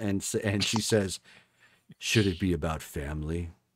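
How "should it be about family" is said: put-on husky voice, much lower and quieter. Describing a woman's voice change, the speaker acts out her line: husky Vin Diesel-like voice. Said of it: "She gets a little husky, and sounds almost like a feminine version of Vin Diesel".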